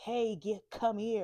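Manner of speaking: loud, summoning calling-out voice. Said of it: "when you're calling people to come to you".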